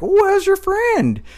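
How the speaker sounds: shrill, very high-pitched, loud clown voice. Retelling what a weird party clown would say, high-pitched clown voice. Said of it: "He had this high-pitched voice".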